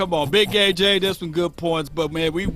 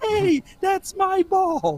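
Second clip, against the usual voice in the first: pitch way up, very high and stretched out; 14 semitones higher than usual. Retelling what Playmaker said in an interview: imitating Playmaker's high-pitched voice. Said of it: "then he get that high-pitched voice".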